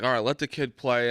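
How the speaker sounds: plain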